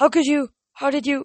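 aghast, appalled tone. The narrator stares at the man who made the manticore vanish, horrified.

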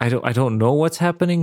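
ordinary talk

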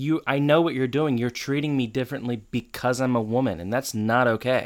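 plain

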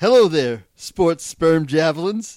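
eager, animated, enthusiastic delivery with swooping pitch. Reading a story aloud as instructed: acted great enthusiasm. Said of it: "To be read with great enthusiasm".

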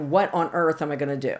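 put-on tearful, crying, pleading voice. Retelling calling the agent after hitting a deer: retelling own crying plea. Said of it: "I'm crying. I'm like".

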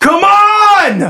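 shrill, very high yell, drawn out on "on". Voicing a character who then moves back into the cavern: yelling. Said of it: "And he yells".

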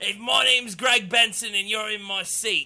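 high, loud, bad Australian accent with laughter. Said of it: "I can't do an Australian accent".

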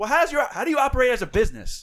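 loud, high, brusque. Retelling a sales call, answering a rude customer: imitating own brusque comeback. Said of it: "I kinda just gave it back to him".

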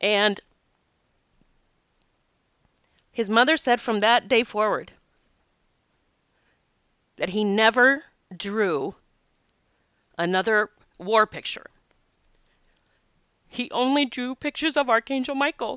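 tearful, choked-up, teary voice. Retelling a story a mother told, tearful and choked up. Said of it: "I can't believe how much I'm tearing up".

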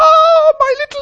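put-on panicking voice. Retelling a mother panicking over her stuck child: imitating a panicking mother. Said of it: "She was panicking".

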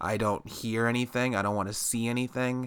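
ordinary talk, nothing marked

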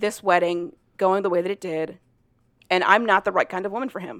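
ordinary talk, nothing marked

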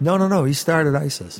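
normal talking voice

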